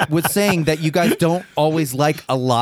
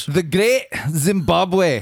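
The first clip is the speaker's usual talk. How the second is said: put-on slow, drawn-out Scottish accent. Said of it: "Is, is, is that the right accent?".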